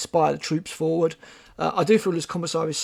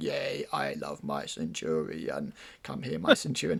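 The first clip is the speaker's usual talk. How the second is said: very low, soft, synthesized computer-like voice; 12 semitones lower, 8 dB quieter than usual. Voicing the Emperor cooing over his Centurion, in a Stephen Hawking voice. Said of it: "in like a Stephen Hawkins voice".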